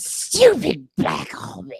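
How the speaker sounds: put-on creature character voice. Showing the others a Gollum impression: Gollum voice. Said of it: "I can do Gollum".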